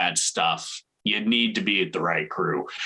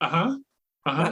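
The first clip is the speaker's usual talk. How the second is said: mock bored, half-listening, pitched-up tone; 9 semitones higher than usual. Imitating his wife's reply to his game talk: imitating a bored uh-huh. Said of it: "she didn't give a shit".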